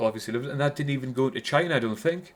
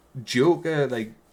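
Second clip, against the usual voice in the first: ordinary talk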